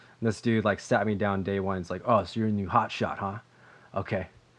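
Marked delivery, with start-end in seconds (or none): 2.1-4.3 put-on ratchet old man voice. Retelling what an engineer said on day one: imitating a ratchet old man. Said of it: "such a ratchet old man".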